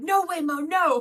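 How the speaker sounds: shrill, very high, loud screaming. Retelling how the Uber driver reacted to an oncoming car: imitating the driver screaming. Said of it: "the guy kept being like".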